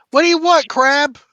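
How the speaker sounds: loud, high-pitched yell in character voice. Yelling a question at a crab in character: yelling in character. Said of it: "So I'm gonna yell out".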